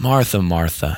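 put-on compassionate tone. Explaining how to read a passage, the speaker quotes him addressing Martha, retelling with compassion. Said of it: "he comes to her with compassion".

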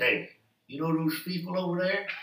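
exaggerated worried voice. Retelling what a worried man said when he came over: exaggerated imitation of him. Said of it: "I'm trying to imitate him".

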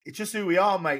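put-on Australian accent. Reading out his quote for the viewers, in an aussie accent. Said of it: "this is my Aussie accent".

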